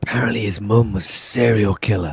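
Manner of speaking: hushed, secretive, confiding half-whisper. Playing a character gossiping to another character about Oliver: half-whispering. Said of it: "and he whispers".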